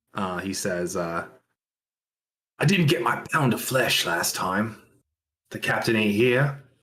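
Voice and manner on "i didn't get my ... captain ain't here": half-whispered aside. Voicing a character who leans in to a player's ear: half-whispering in character. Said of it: "leans in to, like, whisper in your ear".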